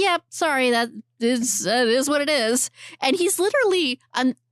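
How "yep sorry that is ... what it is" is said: acted-out smug, self-satisfied delivery. Retelling a film scene, imitating the boyfriend: imitating a smug boyfriend. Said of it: "I know I sound like I'm being smug".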